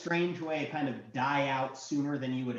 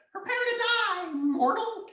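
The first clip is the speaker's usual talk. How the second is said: strange, squeaky, very high goblin voice; 4 dB louder than usual. Narrating, he stares at the player and speaks in a weird goblin voice. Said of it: "in this weird, like, goblin voice says".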